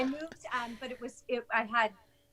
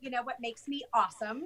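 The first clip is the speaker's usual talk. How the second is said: ordinary talk, nothing marked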